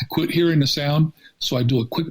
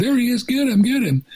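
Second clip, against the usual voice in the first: mock, very high, shrill, excited yelling; 10 semitones higher than usual. Retelling people in the street during a chase: imitating people yelling. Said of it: "people in the street yelling".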